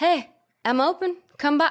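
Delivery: nonchalant, tossed-off tone, slightly high. Retelling a movie scene, imitating Jerry's nonchalant voice. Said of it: "He's so nonchalant".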